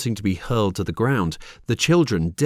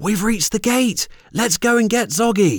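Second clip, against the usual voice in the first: very high, thrilled, excited exclamation; 12 semitones higher, 3 dB louder than usual. Reaching the gate with the other children, he calls out, an excited exclamation. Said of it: "he exclaimed".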